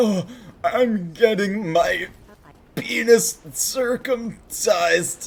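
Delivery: high, slow, pained wail in text-to-speech voice. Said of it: "with that voice, like, he's, like, screaming in pain".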